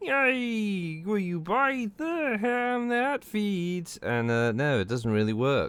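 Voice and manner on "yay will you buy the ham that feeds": "yay" pushed way up high and stretched. Showing how a terrible Kermit impression sounds: terrible Kermit impression. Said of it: "my terrible Kermit impression".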